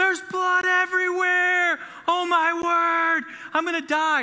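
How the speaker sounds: very high, drawn-out, panicked wail. A parent retells their kids screaming over a scratch, imitating kids screaming. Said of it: "they're screaming like".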